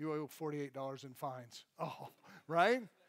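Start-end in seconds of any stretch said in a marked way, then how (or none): 0.0-1.6 low, soft, snarky remark. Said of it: "some snarky person going".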